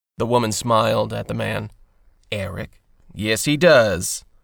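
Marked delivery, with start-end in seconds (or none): 3.1-4.2 light, teasing, playful voice, slightly raised. A father answers his daughter about himself in the third person, playful. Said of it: "he playfully answered in the third person".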